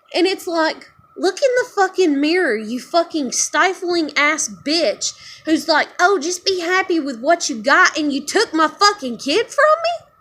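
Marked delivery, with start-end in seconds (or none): 1.1-10.0 furious, higher and louder. Ranting about being told to just be happy with what you got: angry. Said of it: "fuck, I'm mad".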